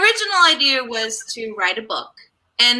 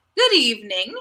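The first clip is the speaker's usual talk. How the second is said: put-on, very strong British accent. Repeating a greeting when asked to say it again: very British. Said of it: "I said that very British".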